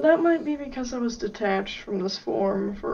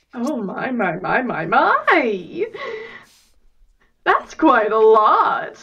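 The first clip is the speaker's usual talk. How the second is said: loud exclaiming, swooping pitch, every word drawn out; 7 dB louder than usual. Reacting to more pieces than expected: acting like Spinel. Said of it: "I'm acting kind of like Spinel".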